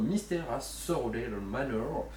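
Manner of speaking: slow, bad English accent.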